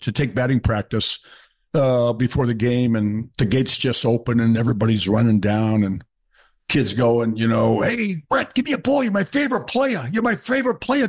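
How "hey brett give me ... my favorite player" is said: put-on New York accent, much higher pitch, slower. Retelling kids shouting to him at batting practice before a game, in a New York accent. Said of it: "in that New York accent".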